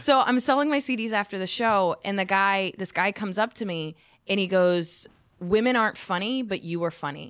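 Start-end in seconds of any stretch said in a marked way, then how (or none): none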